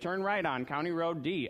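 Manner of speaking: electronic, robotic sat-nav announcement voice. Retelling directions given while driving, imitating an electronic robotic voice. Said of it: "an electronic robotic voice is saying".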